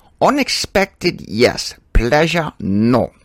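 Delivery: every word drawn out slowly. Acting out a Hogan's Heroes exchange, General Burkhalter voice. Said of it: "General Burkhalter would say".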